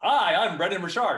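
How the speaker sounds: loud, stiff, awkward, forced delivery.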